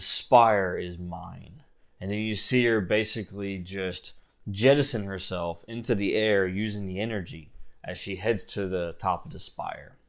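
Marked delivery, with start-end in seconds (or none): 0.0-1.6 slow, scornful, contemptuous, disdainful villain voice. Narrating, Morvita looks at all of the party and speaks, disdainful. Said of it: "looks at all of you in disdain and she says".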